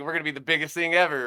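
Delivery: ordinary delivery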